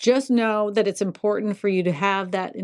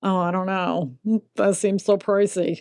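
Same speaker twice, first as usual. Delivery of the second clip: sarcastic tone. Joking about monthly utility costs in Thailand: sarcastic. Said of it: "Is that sarcasm?".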